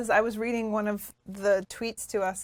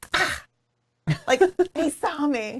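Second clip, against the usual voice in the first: drawn-out, startled, surprised, high and very slow; 6 semitones higher, 4 dB louder than usual. Imitating Tony surprised when the animals run off: Tony impression, acting surprised. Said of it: "This is my Tony impression".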